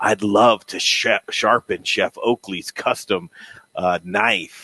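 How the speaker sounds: eerie, unsettling, creepy, slow put-on voice. Speaker addresses Elin Wenzel and says this line in a creepy voice. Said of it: "I'm going to say it in a creepy voice".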